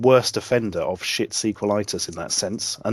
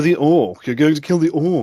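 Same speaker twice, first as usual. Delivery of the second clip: high, loud, put-on plummy posh English accent; 5 semitones higher, 6 dB louder than usual. Told that every game character has a plummy English accent, the listener tries it. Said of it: "it's not like you".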